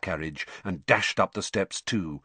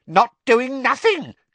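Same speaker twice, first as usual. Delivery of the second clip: very high, very loud, shrill cackle; 6 dB louder than usual. Narrator reads Peeves's line as he lobs water bombs at students; Peeves, cackling. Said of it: "cackled Peeves".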